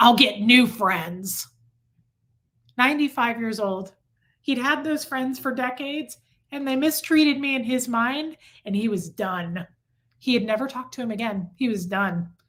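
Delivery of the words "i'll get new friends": growled, growly delivery. Retelling Fred's reply when reminded they were his friends, in Fred's growly voice. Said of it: "He growled at me in this growly voice".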